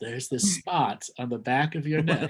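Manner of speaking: guided meditation instructor voice. Joking about spots on the body, using a meditation voice. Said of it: "I could use the meditation voice".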